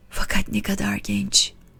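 hushed whisper. An old man at a coffeehouse table, looking at a photograph, whispered. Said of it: "diye fısıldadı".

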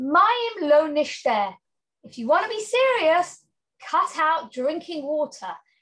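mocking, sarcastic tone. Retelling a rabbi's further reply to them, retelling a sarcastic remark. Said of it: "in a sarcastic tone".

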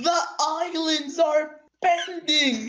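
high voice breaking on the words. Player playing a game with a friend, voice cracking. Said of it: "What was that voice crack?".

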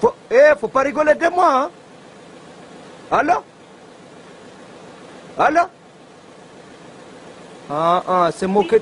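put-on French spoken with a Comorian accent. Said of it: "imite magnifiquement bien l'accent comorien".

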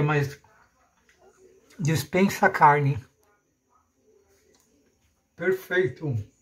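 talking with mouth full. Recipe video host tasting the finished meal, talking with mouth full. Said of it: "Falar com a boca cheia".

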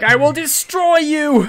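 high, loud, furious battle cry.

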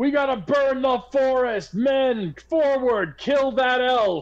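very high, screamed, commanding delivery. Voicing a man from a tent ordering his men to attack: screaming. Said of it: "he starts screaming".

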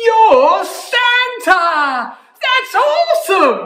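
high, loud, drawn-out delighted gasp. Narrator voices a girl reacting to who she has found, delighted gasp. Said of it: "she gasped in delight".

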